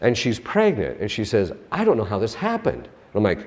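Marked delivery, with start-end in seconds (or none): 1.7-2.8 acted weepy, tearful, crying voice. Retelling what a crying pregnant girl said online: imitating a crying girl. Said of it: "she's crying".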